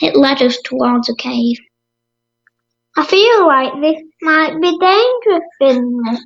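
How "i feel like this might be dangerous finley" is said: shy, timid, unsure, high little voice. Narrator reads a companion speaking as they approach a cave, timidly. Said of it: "said Benjamin timidly".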